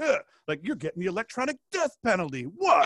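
put-on little gangster voice, giddy, angry, swooping pitch. Retelling telling a child she loses her tablet: imitating own giddy angry outburst. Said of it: "I got a little gangster".

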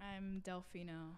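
quiet, let-down, deflated, disappointed tone. A guest gives his name to the stream when asked: disappointed tone. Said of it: "You sound so disappointed in that".

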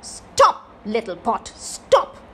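slow, stern, severe, firm delivery. A little girl holds the magic pot and orders it to stop, stern. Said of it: "said sternly".

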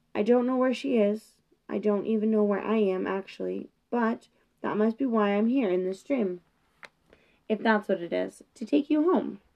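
ordinary delivery

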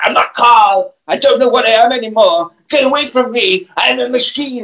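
acted mild shouty yelling. Retelling a story scene, acting out Carl's outburst: Carl, mock-shouting. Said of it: "He gets really, really shouty".

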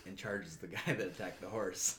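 plain

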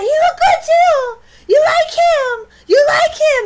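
very high, very loud, shrill hollering. Retelling a woman yelling at them while walking: imitating someone yelling. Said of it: "She starts yelling at us".

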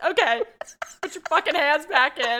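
mock very loud, high sobbing, crying. Retelling giving in after being hit in the face, imitating themself crying. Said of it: "I'm crying going".

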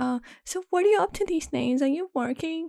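very high, nasally whining voice. Speaker retells a woman asking what he is up to, imitating her nasal voice. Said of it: "It's this nasal fucking voice for me".

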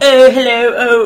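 kooky put-on transatlantic British accent. Describing a character's voice to a co-host, imitating him: kooky transatlantic British accent. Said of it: "he's doing like the transatlantic, like, but like more British".

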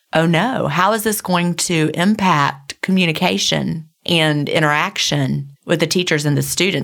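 normal talking voice

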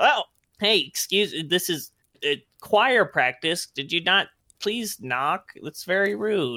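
high, put-on little goblin choir voice. Voicing a goblin caught at choir practice: goblin choir voice. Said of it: "they're kinda".

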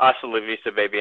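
ordinary talk

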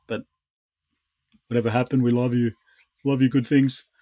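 words stretched out, spoken through a yawn. Podcast co-host wraps up a shout-out, yawning. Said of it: "just yawning and shit".

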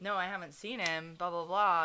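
normal talking voice

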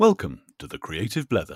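loud, booming voiceover announcer read.

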